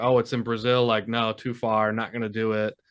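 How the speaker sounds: ordinary delivery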